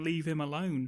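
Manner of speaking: ordinary delivery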